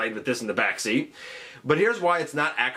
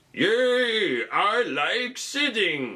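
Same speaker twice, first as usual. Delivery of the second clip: put-on old man voice, much higher, slower; 5 semitones higher than usual. Voicing a figure who sits down, in an old man voice. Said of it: "I don't know why he's talking like an old man".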